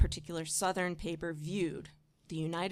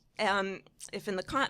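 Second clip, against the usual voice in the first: ordinary talk, nothing marked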